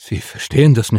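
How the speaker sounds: breathed, breathy delivery. A narrator reads a man answering an impatient Mars-born man, breathing the words. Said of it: "hauchte Henry".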